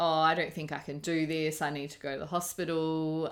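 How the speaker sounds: ordinary talk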